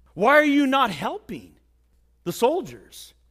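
real loud, swooping delivery. Telling a story, the speaker voices a stranger on horseback questioning a corporal: retelling a loud call. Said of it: "in a real loud voice".

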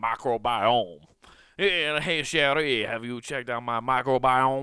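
loud, laid-on, put-on Cajun man accent. Speaker saying a science word the way a cajun man would, cajun man accent. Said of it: "I want to say it like a Cajun man".

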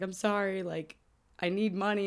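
acted crying, slow, tearful, pleading, words dragged out. Retelling a movie scene where a girl begs for money: imitating someone crying. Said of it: "starts crying".

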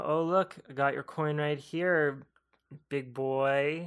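put-on cocky, teasing, taunting tone with boy drawn out. Retelling a movie scene, a character teasing with a coin: imitating a taunt. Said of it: "Cody taunts him with a coin".

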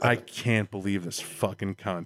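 mock angry, fed-up, pissed-off slow swearing. Retelling what Melissa said out of game, imitating someone pissed off. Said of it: "And she's just pissed".

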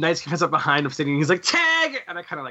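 ordinary talk, nothing marked

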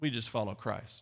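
play-acted, very smug, self-satisfied, superior tone. Retelling what some believers claimed: imitating a smug remark. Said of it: "some very smugly said".

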